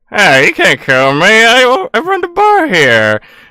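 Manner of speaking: odd robotic voice. A robot bartender answers the players in the bar; Old Gregor's odd robot voice. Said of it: "and your eyes only just go to the bartender because he is the shiniest thing there. / Is something wrong with your voice modulator? No, that's how it's always sound like".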